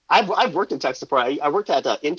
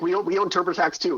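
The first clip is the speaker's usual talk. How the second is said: ordinary delivery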